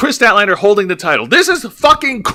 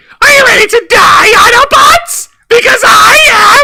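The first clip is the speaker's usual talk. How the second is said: shrill, very high, ear-splitting shout; 6 dB louder than usual. Breaking into a voice bit mid-conversation, a loud Starscream yell. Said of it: "We're breaking s- people's eardrums with that".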